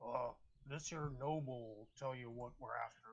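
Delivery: orc voice, whispering. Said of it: "the orc whispers".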